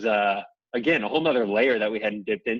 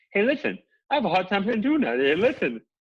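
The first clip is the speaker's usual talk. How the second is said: very high, piping boxer voice, pitched way up; 9 semitones higher than usual. Showing how the boxer would really say the line: Mike Tyson voice. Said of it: "He would also say it more like this".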